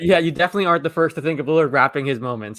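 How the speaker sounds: ordinary talk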